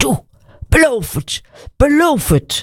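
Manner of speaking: high-pitched, sharp, snapping voice. An old father grabs his son by the collar, snapping in his face. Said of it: "snauwde in zijn gezicht".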